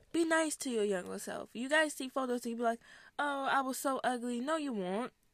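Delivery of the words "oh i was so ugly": usual speaking voice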